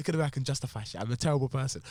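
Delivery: normal talking voice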